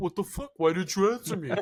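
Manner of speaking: angry accusing outburst. Retelling how he reacted after his early call went unanswered, imitating him pissed off. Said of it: "He was all pissed off".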